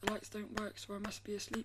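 plain

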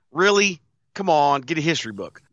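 ordinary delivery

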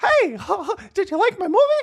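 very high, swooping, bouncing cartoon mouse voice. Acting out a skit with the other speaker, playing Mickey, in a Mickey voice. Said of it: "it's me, Mickey".

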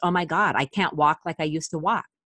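normal talking voice

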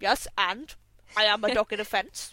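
goofy, silly put-on cartoon dog voice. Describing funny animal photos, the speaker voices the dog in a fence: dog voice. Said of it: "That's my dog voice".

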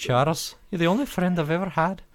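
very high, broad Scottish cartoon accent. Podcast hosts listing comic characters, one doing a Moira impression with a Scottish accent. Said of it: "my X-Men '90s animated series Moira".

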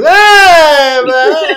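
very high, loud, drawn-out stretched "ah". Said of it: "all you gotta think is".

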